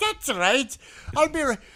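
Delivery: put-on high, loud Irish accent. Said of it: "And I'm like".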